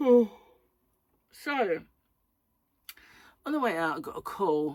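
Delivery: speaking through a yawn. Speaker telling a story late at night, yawning while talking. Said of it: "I'm sorry about the yawning".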